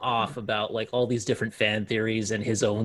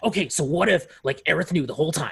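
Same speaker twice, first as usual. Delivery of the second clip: put-on passionate, excited voice, pitched higher; 6 semitones higher than usual. Retelling a Twitch streamer's fan theories, impression of Max. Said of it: "That's a really good impersonation of Max".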